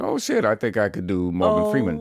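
usual speaking voice

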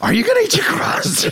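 very high, shrill screaming. Retelling how the listener screamed for pizza crust, imitating someone screaming. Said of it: "legitimately screaming".

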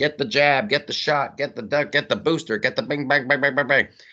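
mock panicked screaming, high-pitched and mild. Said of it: "running around screaming".

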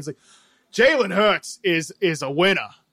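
terrible put-on Philadelphia accent, loud and slow. Mimicking sports talk radio in the city, in a terrible Philadelphia accent. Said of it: "That's a terrible accent".

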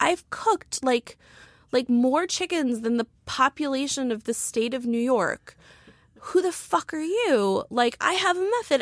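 mock raging, affronted, furious tirade. Retelling a chicken roaster's reply on Twitter: imitating someone's rage. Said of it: "such a purity to his rage".

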